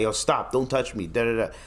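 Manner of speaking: ordinary talk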